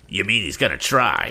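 derisive, sneering tone. Andy answers Sam as a rival car closes in, sneering. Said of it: "sneered Andy".

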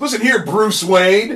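mock sudden yelled call-out, high pitched. Joking about what a character might have yelled: imitating someone yelling. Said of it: "he might as well have just yelled".

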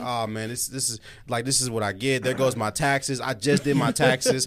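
normal talking voice

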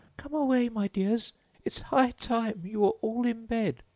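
very high, quavering, trembling call. A canary calls out to its children, in a trembling voice. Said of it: "called out in a trembling voice".

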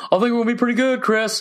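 very high, ridiculous-sounding chirp. Retelling what a Tennessee fan said during a game: imitating Sally. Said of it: "That's my best impression I do".

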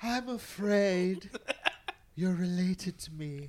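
shrill, booming, very loud, very high emperor voice. Discussing a film scene, the speaker acts out a line in a Palpatine impression. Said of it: "that's a really good impression".

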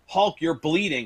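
dead calm voice with a crazy edge. Retelling how Piper told a bleeding Hogan: calm Piper impression. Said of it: "so calmly".

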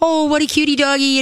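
put-on squeaky baby talk, pitched very high. Imitating house guests greeting the dog, in baby talk. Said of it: "They do that baby talk".

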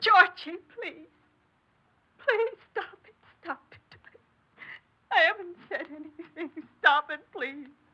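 tearful crying. A mother begs her son Georgie to stop and says she said nothing, crying. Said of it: "You don't have to cry like that".

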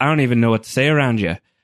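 put-on quick speech in a strong Irish accent. Speaker quotes a character's line from a scene, sounding very Irish. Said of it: "Jamie sounded very Irish there".

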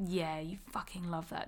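soft, low, sultry, sensual voice.

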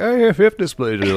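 high, put-on voice of a poor old woman. Imagining a poor old woman telling someone her diagnosis: imitating a poor old woman. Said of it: "a poor old woman who's like".

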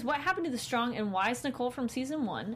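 ordinary talk, nothing marked

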